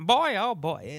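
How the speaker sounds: put-on old-time comedian drawl. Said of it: "Like a W C Fields".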